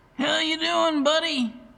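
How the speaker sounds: booming, high-pitched bellow. A man hops off his forklift and greets the narrator, bellowing. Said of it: "He bellowed".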